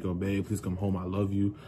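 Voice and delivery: acted-out tearful crying voice. Retelling what they told their partner that night, retelling past begging and crying. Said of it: "I was begging and crying and pleading".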